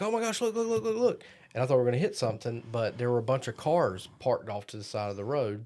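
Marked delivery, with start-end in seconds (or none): 0.0-1.2 very high-pitched repeated screaming. Retelling coming down a road while driving in Scotland, imitating Brett screaming. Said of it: "Brett starts screaming like".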